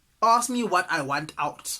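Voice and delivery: ordinary talk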